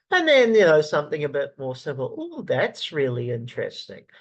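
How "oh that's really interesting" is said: hollow, insincere, fake, forced interest. Speaker gives an example reply while discussing social skills, fake-sounding interest. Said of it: "That also sounds fake in my voice".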